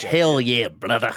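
Scottish-sounding accent. Attempting an Australian redneck accent for the others, in a Scottish-sounding accent. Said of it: "That was Scottish".

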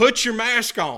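loud, high-pitched screaming. Retelling a man shouting from a passing van window: imitating someone screaming. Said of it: "he is screaming to the top of his lungs".

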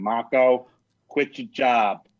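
put-on Boston accent, plainly spoken. Answering what that moment with an artist is, in Mike's Boston accent. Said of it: "Mike says in his Boston accent".

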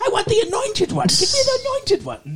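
very high cartoon villain voice, pitch swinging widely. Host demonstrating a voice he does at the show's start, Skeletor voice. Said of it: "my Skeletor voice".

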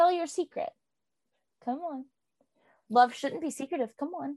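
teasing tone. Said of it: "he is just taunting Nico".

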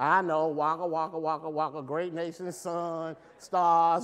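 mock dismissive, slow, sarcastic brush-off tone. Acting out his reply to yet another promise of a great nation: retelling a sarcastic reply. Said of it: "Because he's sarcastic at this point".

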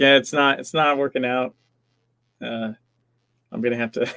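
put-on deadpan delivery. Speaker retells telling their boss they quit as an April Fool's joke, re-enacting deadpan. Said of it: "deadpan deadpan it's like".

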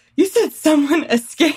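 feigned, put-on shocked tone. Retelling a prank show scene: imitating someone acting shocked. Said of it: "acting all shocked".

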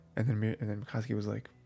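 ordinary talk, nothing marked

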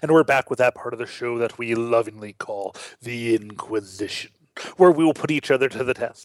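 low, somber, ominous announcer delivery. A show host opening the Inquisition segment, in an ominous somber tone. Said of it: "That kind of sounded more ominous".

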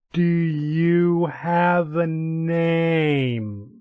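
very slow, stretched-out, drawn-out elven speech. Voicing a dragon asking a player's name in Elven: very slowly spoken. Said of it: "very, very slowly in Elven".

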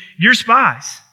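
severe, harsh, accusing tone. Retelling a ruler's accusation to his brothers: imitating harsh speech. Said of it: "He speaks very harshly to them".

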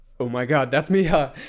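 loud, acted, starstruck, scared freak-out. Retelling spotting Miha getting pizza late at night: imitating Luis freaking out. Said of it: "was, like, freaking out".

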